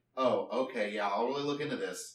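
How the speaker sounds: ordinary delivery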